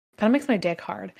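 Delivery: ordinary talk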